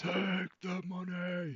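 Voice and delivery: very high, big booming bellow. Recalling a man who shouted it across the trading floors, imitating a big booming shout. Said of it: "he got this big booming voice".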